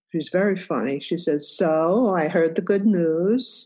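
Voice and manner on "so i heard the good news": put-on Yiddish-accented English.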